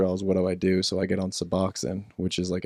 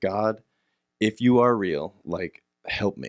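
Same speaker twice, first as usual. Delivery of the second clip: put-on tearful, sobbing, begging plea. Retelling praying alone on the beach at night: retelling a crying prayer. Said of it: "just am crying, like, uncontrollably".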